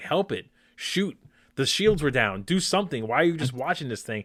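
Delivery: frantic, urgent, worked-up delivery. Retelling what they yelled at the TV during a finale: imitating screaming at the TV. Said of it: "I was almost screaming at the T V".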